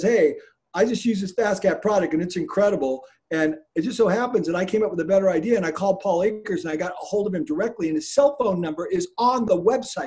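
ordinary delivery

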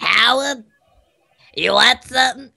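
put-on husky voice. Doing a voice from a TV show: husky voice from The Big Bang Theory. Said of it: "It's like the one from the Big Bang Theory".

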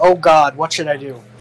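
sarcastic, mocking, pleading tone. Putting hands together in character and praying to a god: sarcastic prayer. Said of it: "very sarcastically".

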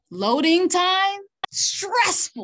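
high, loud, slow passionate outburst.

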